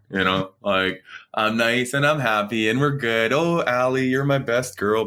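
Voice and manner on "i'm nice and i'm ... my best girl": sweet, nice, happy, doting dad voice. A dad demonstrates the voice he uses now and then: nice happy dad voice. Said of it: "I bring out the dad voice".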